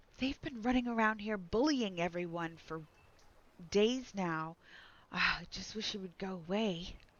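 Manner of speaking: hushed whisper. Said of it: "two females ten feet away from you are whispering".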